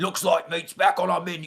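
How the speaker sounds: put-on fantasy-orc monster voice with British accent. Imitating a movie creature's line: Uruk-hai voice. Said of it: "like the Uruk-hai from Lord of the Rings".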